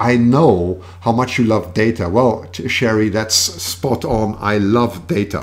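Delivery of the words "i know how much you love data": normal talking voice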